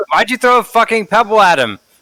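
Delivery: shouting in anger. Player in a game, in character, yelling at another character: yelling angrily. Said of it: "I'm yelling at Tom".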